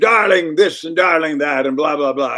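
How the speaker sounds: quirky comic voice. Retelling a colleague's voice from a makeup chair: imitating her funny way of talking. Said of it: "she had a funny, funny way of talking".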